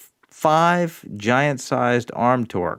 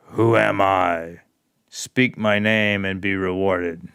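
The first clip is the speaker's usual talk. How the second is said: grand, deep, dramatic statue voice; 4 semitones lower than usual. A game master voices a statue as the players walk past, booming voice. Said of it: "a booming voice fills the air".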